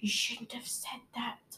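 very quiet, soft whisper under the breath. Bert, standing right next to Daisy, whispers to her as the children stare. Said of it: "whispered Bert".

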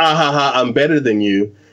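put-on snooty laugh. Describing a character's two laughs, the speaker imitates a snobby rich girl's laugh. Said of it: "the snobby rich girl who's like".

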